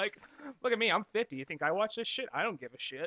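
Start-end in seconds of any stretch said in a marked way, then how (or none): 0.6-2.3 deadpan, very dry, bone-dry sarcastic tone. Imitating a pledge drive presenter: imitating a dry sarcastic tone. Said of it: "that very dry, sarcastic tone".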